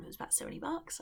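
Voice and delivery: whispered, kept very quiet. Telling viewers a price so mum doesn't hear: said quietly. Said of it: "I wanna say it quietly".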